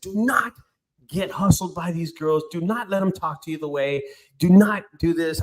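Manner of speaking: emphatic, voice lifted. Retelling a warning given to the person addressed, retelling own raised voice. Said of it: "I kind of raised my voice".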